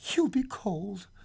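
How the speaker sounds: gentle, tender, loving, caring tone. The old man wakes at night to hear his wife weeping at the window: said tenderly. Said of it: "he said tenderly".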